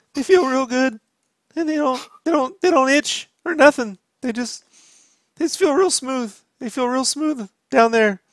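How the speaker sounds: voice cracking. Host doing an underwear ad read, cracked voice. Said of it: "I can do the cracked voice".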